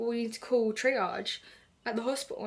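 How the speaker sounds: ordinary talk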